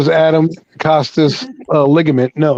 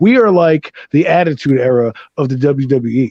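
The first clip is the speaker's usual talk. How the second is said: usual speaking voice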